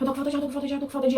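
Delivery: frantic, desperate pleading repeated over and over. Retelling struggling for air, imitating own past desperation. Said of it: "eu tava meio que desesperada mesmo".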